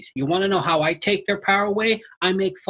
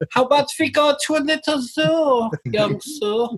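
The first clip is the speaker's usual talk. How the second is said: put-on German accent; 7 semitones higher than usual. Speaker, told his German voice is the Nazi voice, leans into it: mock Nazi German voice. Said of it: "the Nazi voice".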